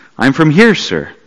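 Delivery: plain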